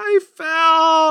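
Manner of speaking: put-on tearful little kid, high, loud, crying hard. Retelling an injury story, speaker quotes a hurt boy at the door, imitating a child crying. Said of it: "he's crying his head off".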